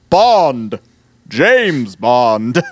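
voice pushed as deep and low as possible. Imagining an actor saying a spy's famous line: Matt Berry voice. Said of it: "I can't get my voice deep enough to be Matt Berry".

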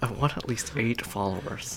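angry whisper through clenched, gritted teeth. Talking with co-hosts during a recording, in an angry whisper. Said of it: "This is a mad whisper".

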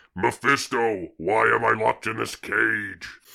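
fake monster yelling. Reenacting a show scene, Swamp Thing screams and yells: Swamp Thing yelling. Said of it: "Swamp Thing screams and then yells".

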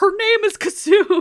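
very high, very loud, drawn-out yell. Retelling a film scene where Kartik corrects a name: imitating Kartik yelling back. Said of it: "Kartik yells back".

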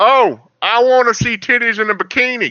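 high, put-on southern hillbilly accent. Joking around, doing a put-on hillbilly voice. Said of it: "mine was hillbilly".

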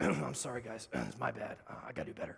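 low, rough voice through a cough. Imitating a football coach's press conference apology: Andy Reid coughing voice. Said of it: "With that kind of coughing voice that Andy Reid always had".

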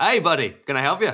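awful, clumsy, laid-on put-on Australian accent. Retelling turning around to greet someone, Danny Ocean's Australian accent. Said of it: "in Danny Ocean's best Australian accent".

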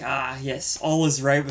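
ordinary talk, nothing marked

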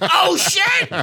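very high, loud, shrill, panicked shriek. Retelling her reaction to guns pointed at her: imitating someone freaking out. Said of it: "She freaks out".

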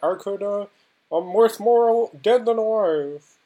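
pushed high with stumbles. Quoting a line from the movie: Jimmy Stewart impression. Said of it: "I'm trying to do my Jimmy Stewart".

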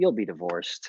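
low, offhand, flippant tone. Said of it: "He just very flippantly said".

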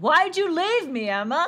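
sudden, high, loud, eerie acted shriek. Recapping a scene where a character suddenly screams at a party, retelling a sudden scream. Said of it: "he just starts screaming".

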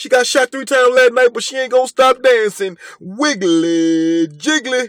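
high, loud, slow club DJ announcer voice. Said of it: "Okay, that was good".

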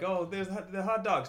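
mock yelling. Retelling how somebody yelled out at lunch: imitating someone yelling. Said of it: "somebody yelled out".

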